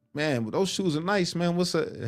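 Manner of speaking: put-on New York accent. Retelling a guy's words in a dormitory, in a New York accent. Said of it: "He talked like in New York".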